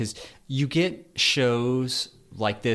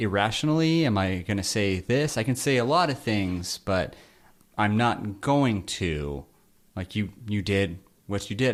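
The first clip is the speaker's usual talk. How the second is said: normal talking voice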